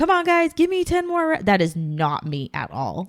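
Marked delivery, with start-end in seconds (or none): 0.0-1.3 very high, extroverted, hyped yelling. Describing a type of extroverted instructor: imitating someone yelling into a microphone. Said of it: "the extroverted yelling in a microphone".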